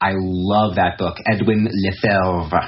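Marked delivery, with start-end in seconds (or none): 1.2-2.7 attempted put-on French accent. Recommending a book, the speaker tries the author's name, attempted french accent. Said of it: "That's my attempt at a French accent".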